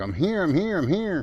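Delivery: repeated, high, insistent screaming. Retelling how someone stood out screaming at them: imitating someone screaming. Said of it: "screaming at me like".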